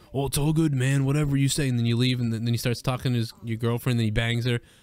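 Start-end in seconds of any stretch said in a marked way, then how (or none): 0.1-1.7 easygoing, breezy, agreeable tone. Imagining Hogan brushing off a complaint, Hulk Hogan impression. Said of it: "I can only imagine Hogan, like, just being like".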